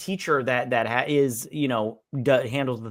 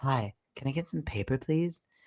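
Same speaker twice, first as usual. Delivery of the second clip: sweet, angelic, gentle-sounding voice; 6 dB quieter than usual. Retelling a movie scene where Karen asks for paper: Karen's angelic voice. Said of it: "talking as if an angel is sleeping on the tip of her tongue".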